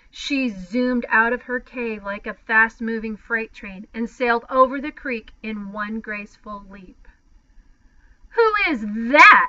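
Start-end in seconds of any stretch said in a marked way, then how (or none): 8.3-9.4 put-on loud, screeching shriek from boys. Three boys, as a monster mother leaps toward them, shrieking. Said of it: "shrieked the boys".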